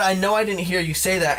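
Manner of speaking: normal talking voice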